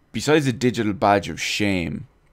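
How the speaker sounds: normal talking voice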